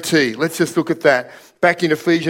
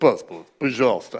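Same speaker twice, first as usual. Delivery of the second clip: put-on low, stern, dead-serious voice with Russian accent; 6 semitones lower, 4 dB quieter than usual. Retelling russian border guards asking for passports: imitating serious russian guards. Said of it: "It's a serious knee quaking kind of".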